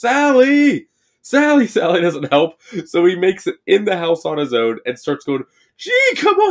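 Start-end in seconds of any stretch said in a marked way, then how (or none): 0.0-1.7 put-on very high, stretched-out, drawn-out yelling. Recapping a scene with Franklin, imitating a character yelling for Sally. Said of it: "because he starts yelling".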